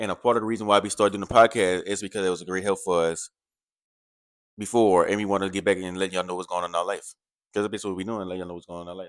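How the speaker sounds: words tumbling out nonstop, rapid and rattled-off. Explaining to listeners what was meant earlier: talking very fast. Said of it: "He talked so fast that he said that sentence in two seconds".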